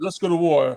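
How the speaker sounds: put-on British villain voice. Imitating how the Neo Sapien villains talk: posh British Neo Sapien voice. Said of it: "That's how all the Neo Sapiens sound".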